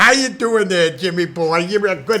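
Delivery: high, loud, called-out voice. Showing how your departed aunt, heard in many cartoons, always talked to you, as an Aunt Grace impression. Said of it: "she always sounded like she was talking like this".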